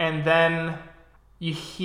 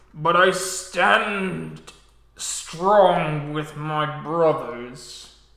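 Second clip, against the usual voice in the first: guttural, cracking, throaty put-on voice. Acting out a character who has wandered the earth, in a guttural voice. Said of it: "a shift and a crack and a guttural voice".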